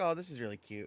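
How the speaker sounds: plain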